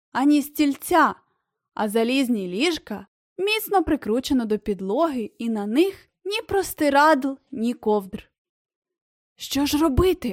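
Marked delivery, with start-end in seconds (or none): 9.3-10.3 voiced, worried stage half-whisper. Reading a story, a character in a cell leans toward the window, half-whispering. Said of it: "прошепотів Дін Гіор".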